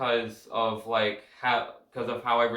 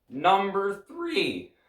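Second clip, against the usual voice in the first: voice breaking mid-word, cracking and pitching up; 9 semitones higher than usual. Counting down a music ranking, voice cracking. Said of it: "Sorry with that voice crack".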